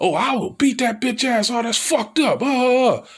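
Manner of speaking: put-on shrill shouts, very high pitched. Retelling how a movie crowd reacted during the film: imitating audience yelling at screen. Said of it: "They were yelling".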